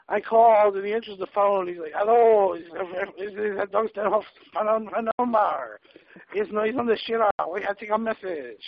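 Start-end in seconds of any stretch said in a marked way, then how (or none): 1.9-8.7 bad fake French accent, slower. Retelling a friend's phone prank, the speaker mimics him answering: bad french accent. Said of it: "don't even do a good French accent".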